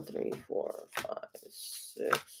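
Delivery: soft, unvoiced whisper.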